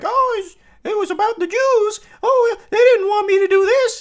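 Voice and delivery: very high, loud, squeaky puppet voice. Retelling how a man made his tiny net prop talk, in an Elmo voice. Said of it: "he gave it an Elmo voice".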